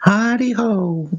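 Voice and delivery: very high, cheery theme-park cast-member voice. Speaker greeting someone, trying to sound like a Disney worker: Disney worker voice. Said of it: "Got to sound like you work for Disney".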